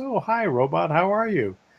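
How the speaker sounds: put-on robotic caller voice. Retelling a sales robot's phone call: imitating a robot caller's voice. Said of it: "and it has this voice, and it says".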